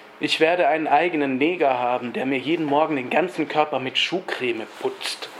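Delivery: normal talking voice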